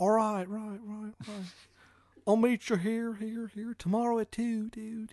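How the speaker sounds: put-on shoddy, very high-pitched Maryland accent. Retelling what he called out as he disappeared, bad Maryland accent. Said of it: "In his shitty Maryland accent".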